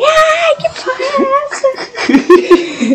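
slow, swooping, very high, drawn-out shriek. Retelling how a girl reacted after being poked: imitating a girl screaming. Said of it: "ela saiu gritando".

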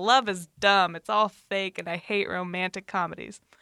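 ordinary delivery

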